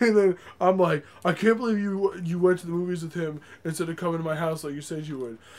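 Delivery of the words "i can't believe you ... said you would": deliberately dumb, silly, put-on stupid voice. Acting out Chris reading a text argument aloud: Chris's stupid voice. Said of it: "he puts, like, a stupid voice on".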